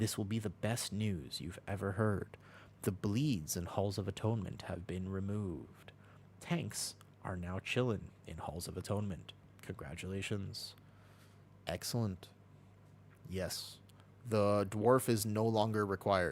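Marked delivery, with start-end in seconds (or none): 0.0-12.3 soft, hushed, close ASMR-style delivery. Shifting into an ASMR voice to tell the listener some news. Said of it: "I will shift into my A S M R voice".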